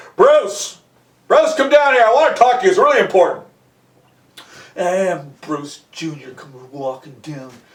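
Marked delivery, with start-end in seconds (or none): 0.2-3.5 stern, gruff, fast fatherly voice. Retelling a father calling his son bruce downstairs, in a gruff voice. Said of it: "He didn't even realize he was having that gruff voice".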